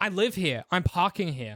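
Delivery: put-on woman's tone of voice. Retelling a parking dispute with a woman, imitating her tone. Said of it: "This this tone of voice too".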